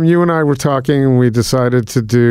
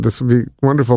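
ordinary talk, nothing marked

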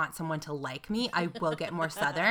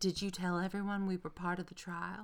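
put-on honeyed, sweet Southern accent; 9 dB quieter than usual. Quoting her mom while telling a story, sweet Southern accent. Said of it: "does your mom have a sweet Southern accent?".

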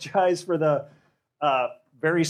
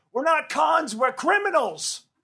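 mock shout, very high, slow and drawn out; 11 semitones higher than usual. Telling a story, the speaker quotes a guy who yelled out, imitating someone yelling. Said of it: "the guy yells out".

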